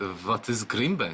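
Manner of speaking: put-on puzzled-sounding Eastern European accent. Retelling what a doctor asked, imitating his Eastern European accent. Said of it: "in his accent".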